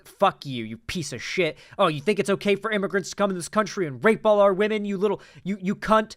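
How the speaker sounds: mock heated, hateful screaming rant, male voice. Acting out how a man screamed into a woman's face, imitating his screaming. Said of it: "That's like how he's screaming into her face".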